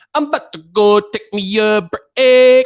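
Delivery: stilted, robotic delivery, "break" chopped apart. Imitating a coworker announcing a break, mocking the broken-up word "break". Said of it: "ain't nobody gonna talk like that".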